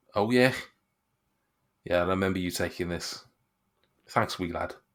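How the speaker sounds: condescending. Game master voices a man thanking the player for a handed-over item, patronising. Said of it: "he's patronising".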